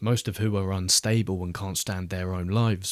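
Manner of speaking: ordinary delivery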